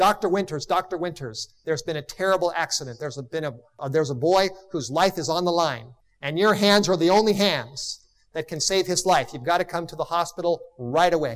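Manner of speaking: plain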